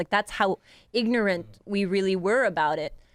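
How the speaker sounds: ordinary delivery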